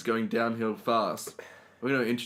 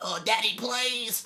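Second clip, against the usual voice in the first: put-on tiny, very high little child's voice; 12 semitones higher than usual. Acting out a child begging a dad: imitating a little kid. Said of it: "He was like".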